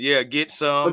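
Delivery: ordinary delivery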